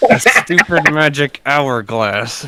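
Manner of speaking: slow, ground out through gritted teeth. Repeating the answer when asked again: said through gritted teeth. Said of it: "Say through gritted teeth".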